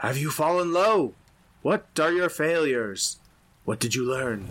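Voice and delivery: high, disembodied spirit voice crying out. Narrating a sanctum scene where a voice questions the listener, crying out. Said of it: "A voice cries out to you".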